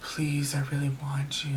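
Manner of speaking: creepy, eerie, hushed whisper. Retelling voicemails left by a repeat caller, imitating a creepy eerie whisper. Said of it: "like whispering through the phone, like just really creepy, eerie voices".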